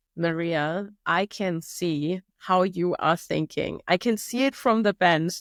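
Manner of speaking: plain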